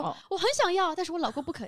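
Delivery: very high, put-on squabbling complaint. A woman retells pretending to quarrel with her husband to look nice, acting out a fake quarrel. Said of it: "我就会装作跟他吵架".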